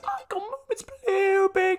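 very high voice, breaking and squeaking. Reacting to a player in a pack opening: voice cracking. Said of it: "my voice just died there".

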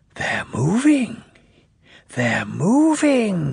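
whispering. Testing his pistons before his driver comes, he speaks, whispering. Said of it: "he whispered".

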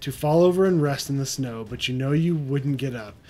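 ordinary delivery

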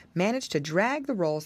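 plain

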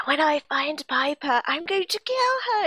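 mock villainous voice. Recapping a favourite episode moment, doing Lizzie's evil voice. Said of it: "such an evil voice that comes out of her".

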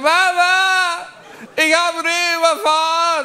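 very high, tearful sobbing wail, Mama drawn out. Retelling phoning their mom, imitating own tearful crying. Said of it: "Aber auch wirklich verheult".

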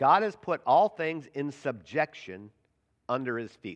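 slow, deliberate reading aloud.

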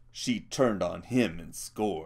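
ordinary delivery

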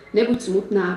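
plain reading voice

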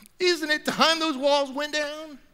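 high, tearful weeping voice. Speaking to a church about taking down racial walls, in a crying voice. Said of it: "(in a crying voice)".

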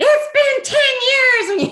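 acted scream, high and loud. Retelling how the motel manager came out of the office: imitating someone screaming. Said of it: "came out screaming".

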